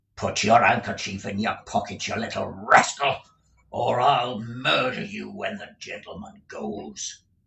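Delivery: fierce, forceful stage whisper. Narrator reading a schoolmaster's threat just before a gentleman enters, in a fierce whisper. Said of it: "uttered these words in a fierce whisper".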